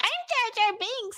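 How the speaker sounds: put-on very high, slow, drawn-out small-child voice. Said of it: "This little boy, he's like".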